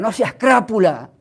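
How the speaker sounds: mock cross, angry scolding shout. Recalling what an angry elder used to shout: imitating an angry elder shouting. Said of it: "gritaba así".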